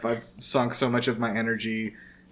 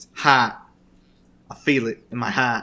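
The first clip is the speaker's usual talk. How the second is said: loud, fake Australian accent, especially on heart; 5 dB louder than usual. Showing the word to nail in the accent: put-on Australian accent. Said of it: "The word that you gotta get to nail down is heart".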